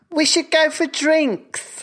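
put-on English accent, pitched very high. Asking about a team's office phrase, imitating an English marketer. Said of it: "in this exact voice? ... An English marketer".

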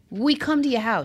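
play-acted lawyer shout, light and half-strength. Imitating a lawyer in a commercial: imitating a lawyer yelling. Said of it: "yelling at you".

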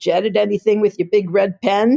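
put-on thick Bronx New York accent. Retelling what a man asked after the speaker said they're a magazine editor: thick Bronx accent. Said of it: "has a very thick accent of".

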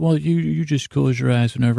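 ordinary talk, nothing marked

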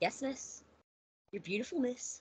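mock thick, heavy Irish accent. Describing a man who calls her miss too much, imitating his thick irish accent. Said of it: "thick Irish accent that he's got".

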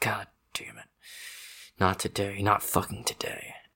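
muttering under breath. Voicing a man who ignores the player, muttering to himself. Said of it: "He's like muttering like".

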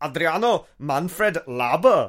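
very loud put-on German accent. Asked by another speaker to do it again, naming a player in a German accent. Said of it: "can you cue your German accent one more time".

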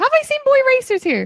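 really high-pitched voice. Asking the others a question: really high pitched voice. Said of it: "I got really high pitched there".

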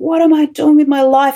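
cried out, high-pitched and desperate. Retelling praying in the car while driving to work, re-enacting a desperate scream. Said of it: "I'm screaming it at the top of my head".

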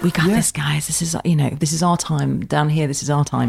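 sort of whispering, soft aside. Describing his moments on the show, quoting him sort of whispering to camera. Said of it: "moments where he sort of whispers to camera".

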